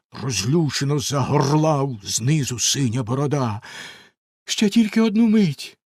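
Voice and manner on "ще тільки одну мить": pleading, imploring tone. The wife answers Bluebeard, who is shouting up from below, pleading. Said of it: "благально мовила дружина".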